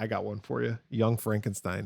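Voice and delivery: ordinary talk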